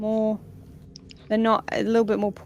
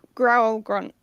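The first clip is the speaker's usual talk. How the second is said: ordinary talk, nothing marked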